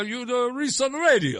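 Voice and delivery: put-on heavy old Italian accent. Retelling what an old man standing nearby said to him, thick old Italian accent. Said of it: "old Italian guy, thick accent".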